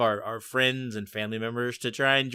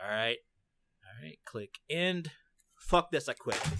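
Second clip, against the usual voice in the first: disgusted, fed-up, done-with-it tone; 9 dB quieter than usual. Imitating everybody after their interview, quitting: imitating a fed-up interview guest. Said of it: "this is my impersonation of, like, everybody after, after their interview".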